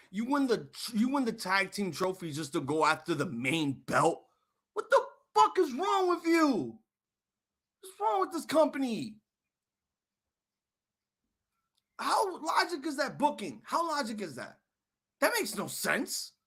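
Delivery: upset, furious ranting with swooping pitch. Ranting to the chat about wrestling booking that makes no sense: upset angry rant. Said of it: "I'm really upset right now".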